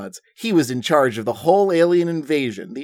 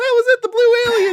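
very high voice, pitch climbing upward; 3 dB louder than usual. A narrator reading a story voices Billy answering, Billy's high voice. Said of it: "Billy says in your high voice".

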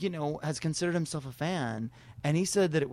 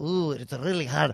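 put-on thick brogue; 3 dB louder than usual. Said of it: "she has that thick brogue".

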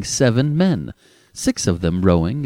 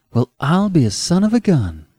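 stunned, dazed, pitched-up wonder; 5 semitones higher than usual. A woman facing a dark-haired young man: dazed. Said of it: "she said dazedly".

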